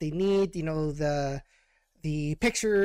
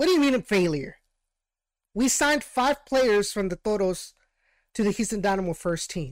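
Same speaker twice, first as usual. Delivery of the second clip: mock furious, angry, pissed-off tone; 3 semitones higher, 4 dB louder than usual. Retelling the head coach's reply to a question: imitating someone super pissed. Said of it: "super pissed".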